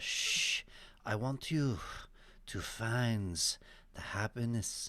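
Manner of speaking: put-on Indian accent. Answering a request to speak in Osho's accent: Osho accent. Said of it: "can you say it in Osho's accent?".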